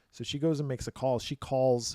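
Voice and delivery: ordinary talk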